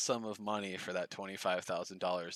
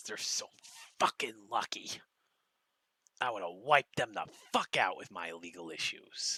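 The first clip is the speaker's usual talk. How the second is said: whispered mock fury growing louder. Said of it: "you can hear the anger in his voice".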